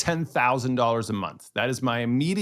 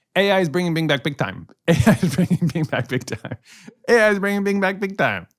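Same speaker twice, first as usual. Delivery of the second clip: fast, loud, rattled-off, repeated delivery; 6 semitones higher, 6 dB louder than usual. Attempting a tongue twister after the other speaker, said three times fast. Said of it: "Can you say it three times fast?".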